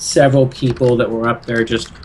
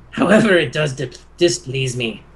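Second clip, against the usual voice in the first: much deeper, very harsh, booming voice. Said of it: "a much deeper, very harsh voice boom out of the sky".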